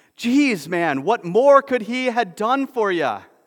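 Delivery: all-out furious rage shriek, very high, very loud. A woman stands up, her fear turned to fury, furious scream. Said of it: "she stood up and she screamed".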